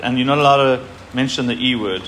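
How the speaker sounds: plain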